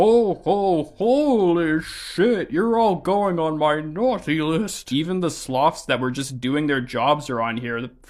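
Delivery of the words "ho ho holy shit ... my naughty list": slow, drawn-out, high-pitched, fed-up delivery. Retelling how Santa reacts to the mess: imitating Santa. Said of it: "so he's like".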